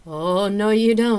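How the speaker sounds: laughing, very loud, very slow, booming, drawn-out. The narrator pushes away a woman nibbling their neck, laughing. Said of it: "I laughed".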